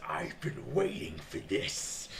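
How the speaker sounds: acted-out, slow, swooping, visceral bloodthirsty relish savouring each word. Imitating a man's line with mock bloodthirsty eagerness. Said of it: "just like the visceral, just bloodlust in his voice".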